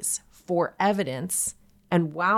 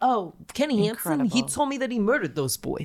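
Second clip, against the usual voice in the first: put-on New York accent, pitched up; 5 semitones higher than usual. Retelling what an informant said, in a put-on New York accent. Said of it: "That's the New York accent".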